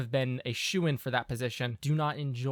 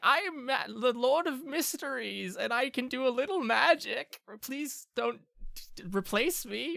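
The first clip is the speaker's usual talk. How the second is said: put-on old man voice, pitched way up; 11 semitones higher than usual. Describing a council member as an old man, Lord Peters voice. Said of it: "a old man who's kinda like".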